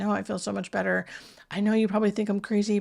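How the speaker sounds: mock whispering. Retelling what a confused gentleman said while grabbing her arm: imitating someone whispering. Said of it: "whispering to me".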